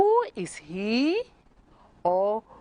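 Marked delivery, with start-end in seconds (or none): 0.0-1.2 wrong upward tune, climbing on he. In a lesson, showing the wrong way to ask a question: wrong rising question intonation. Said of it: "You cannot say".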